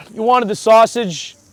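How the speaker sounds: high, loud, complaining impression of a celebrity voice.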